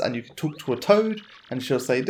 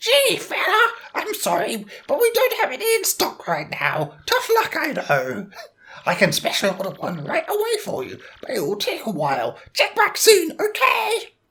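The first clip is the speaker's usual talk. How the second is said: squeaky, sing-song, swooping toad voice, very high. Reading a shop toad's lines aloud in a game: toad voice. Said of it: "I need to be doing, like, a toad voice".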